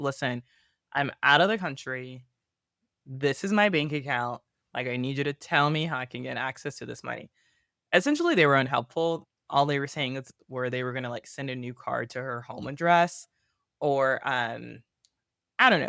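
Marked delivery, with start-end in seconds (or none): none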